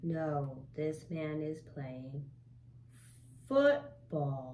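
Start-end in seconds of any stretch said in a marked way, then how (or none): 3.5-4.5 "football" strongly stressed, punched out. Answering a practice question in a speaking lesson, correct the sentence with emphasis on football. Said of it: "good emphasis on the word football".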